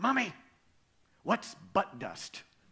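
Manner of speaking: mock overly loud whisper. Retelling a little girl asking her mom during a sermon: imitating a too loud whisper. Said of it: "in a too loud whisper".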